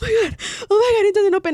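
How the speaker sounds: put-on very high-pitched, panicky nervous fretting. Retelling trying to open a jammed door while followed: imitating own nervous panic. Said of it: "because I'm nervous".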